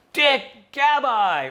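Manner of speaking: very high, shrill, loud, far-carrying scream. Retelling how two people always greeted them from far away: imitating someone screaming. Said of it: "they would scream".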